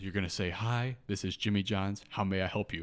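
ordinary talk

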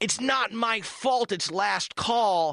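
put-on very slow, stretched-out shout, pitched high. Retelling a friend yelling at the speaker walking out of a bar: retelling a yell. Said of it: "She yells at me".

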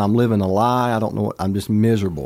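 plain

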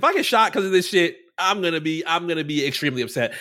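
normal talking voice

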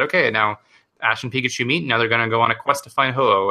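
ordinary delivery

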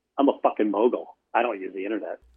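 dead-faced, bone-dry, flat deadpan delivery. Retelling a meeting where Mike Bloomberg answers: imitating Mike Bloomberg deadpan. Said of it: "just total dead face".

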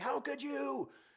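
play-acted, very high, screamed. Retelling what the son's mom said on the phone: imitating someone screaming. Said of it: "screaming at me".

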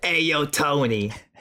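mobster-style mafia gangster street voice. Imagining the cat as a mobster talking to Tony, mafia voice. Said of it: "like a mafia".

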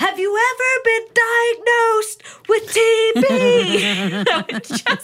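put-on shrill, very slow, very high screaming yell. Retelling an admission interview with a patient, retelling screaming at patient. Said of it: "I'm just screaming at him like".

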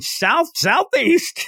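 very high, loud, bellowing yell. Recapping a game, imitating Crow yelling. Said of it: "Crow's just yelling".

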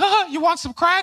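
squeaky, high-pitched hustler voice. Joking that Mickey Mouse is a drug dealer where he's from: Mickey Mouse as drug dealer. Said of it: "Mickey Mouse is a drug dealer where I'm from. You know, he walks around like".

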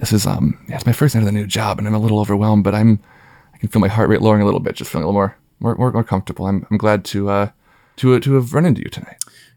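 conspiratorial hushed voice. Playing a character who leans in so only one person hears: conspiratorial, leaning in. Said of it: "kinda leans in conspiratorially".

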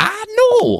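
very high-pitched, squeaky exclamation. Imitating a late-night host's catchphrase at the camera: Craig Ferguson impression. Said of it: "He kinda has this reaction where he goes".

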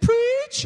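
very high-pitched, squeaky, squealing preacher voice. Showing how they say preach during preaching, very high-pitched "preach". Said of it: "We actually say it in a real high-pitched voice".

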